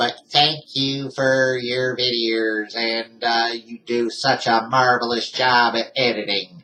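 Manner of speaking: put-on robotic woman's voice. Retelling a thank-you message that came up in a robotic woman's voice. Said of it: "a voice came up like a robotic uh, woman's voice".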